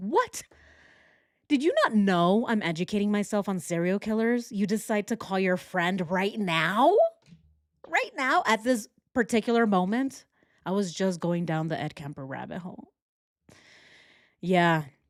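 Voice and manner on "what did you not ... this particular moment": indignant, irritated, angry outburst. Retelling being cut off from dial-up internet: imitating own angry past self. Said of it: "I'm angry at her 'cause I'm like".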